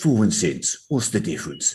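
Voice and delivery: put-on dodgy, menacing London accent character voice. Recalling how they asked a simple grammar question in a sort of London accent. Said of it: "did it in a sort of London accent".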